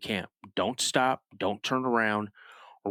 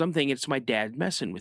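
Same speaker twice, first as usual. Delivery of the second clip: ordinary talk, nothing marked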